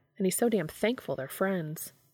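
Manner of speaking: plain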